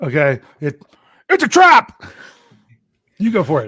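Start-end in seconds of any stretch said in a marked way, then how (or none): 0.6-2.0 belted out loud, very high pitch. Trying an Admiral Ackbar impression for a co-host. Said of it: "their best Admiral Akbar impersonation".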